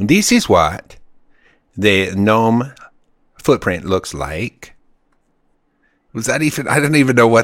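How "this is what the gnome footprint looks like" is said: slow, put-on Swedish accent. Quoting someone's line about footprints in a book, put-on Swedish accent. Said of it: "I'm going to do my Swedish accent".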